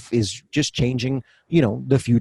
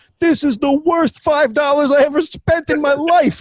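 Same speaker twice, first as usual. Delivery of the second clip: very high-pitched, shrill yell; 4 dB louder than usual. Retelling what the guy behind at the game said: imitating a fan yelling. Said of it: "the guy behind me yells".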